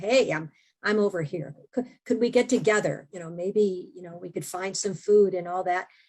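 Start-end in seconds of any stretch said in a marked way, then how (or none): none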